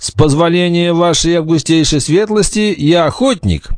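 caustic, mocking politeness. Robert replies to the knight who challenged him for carrying a bow, sarcastically. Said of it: "язвительно ответил Роберт".

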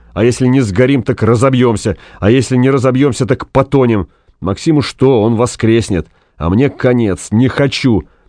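ordinary delivery, nothing marked

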